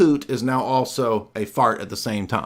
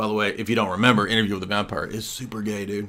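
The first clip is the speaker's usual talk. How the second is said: ordinary talk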